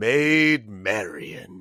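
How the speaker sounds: mock laughing voice. Retelling an anecdote, the speaker quotes a man, retelling a laugh in a put-on voice. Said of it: "and I'm laughing now in this voice".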